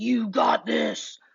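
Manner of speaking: huge, menacing, very loud booming voice. Demonstrating a fun way to say a self-talk statement, in a big scary voice. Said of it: "in like a big, scary, like".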